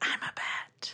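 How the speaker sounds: hushed, soft, breathy whisper. Quoting how a woman says a line in a story, whispered. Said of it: "But she like whispers it, you know, like".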